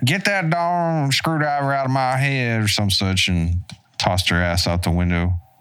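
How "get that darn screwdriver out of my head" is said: put-on high, irate, angry Southern woman's voice and accent. Quoting a talking zombie head from a movie: angry woman's Southern accent. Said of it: "an angry woman's, uh, like, a Southern accent".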